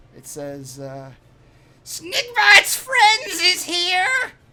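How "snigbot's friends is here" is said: very high, loud, shrill goblin voice, sounding far off. Game master voicing someone at the back of the canyon, calling out. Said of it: "you hear a voice call out".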